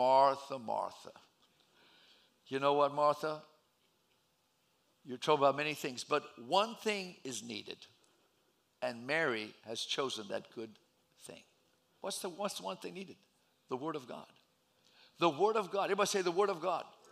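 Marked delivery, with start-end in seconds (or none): 0.0-11.4 gentle, calm speech. Retelling Jesus answering Martha about her sister Mary; soft, calm voice as Jesus. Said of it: "with a soft, calm voice".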